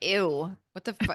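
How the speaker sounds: mock scornful, disgusted, grossed-out critical voice. Describing inner voices, speaker acts out the critical one, acting out inner critical voice. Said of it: "My critical voice would be like".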